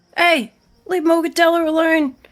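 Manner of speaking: very high, very loud, shrill furious yell. Playing a small character who runs up to defend Morgadella: character shouting in anger. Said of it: "she just runs up and she's like".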